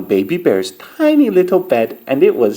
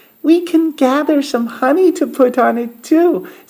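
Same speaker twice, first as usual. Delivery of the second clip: high, tiny squeaky voice; 11 semitones higher than usual. Reading the Goldilocks story aloud, giving Baby Bear's line in a squeaky tiny Baby Bear voice. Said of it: "squeaked Baby Bear in his tiny little voice".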